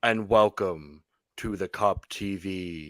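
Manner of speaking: low-pitched, slow spooky voice. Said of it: "you can't do that voice the whole time".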